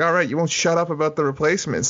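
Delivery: ordinary talk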